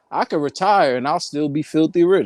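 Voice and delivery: ordinary talk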